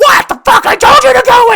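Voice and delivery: mock, very high, very loud, angry screaming. Retelling a woman shouting at people knocking at her door: imitating a woman yelling angrily. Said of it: "And then she sees the police".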